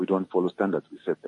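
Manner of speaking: ordinary talk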